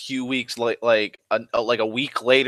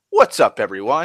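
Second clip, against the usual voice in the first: put-on chipper cheerful voice, louder; 5 dB louder than usual. Mocking a video's upbeat tone after a sad thumbnail: imitating Boogie sounding chipper. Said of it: "he's chipper".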